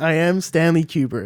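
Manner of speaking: bad put-on American accent. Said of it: "reportedly had a really bad American accent".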